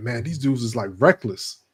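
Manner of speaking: normal talking voice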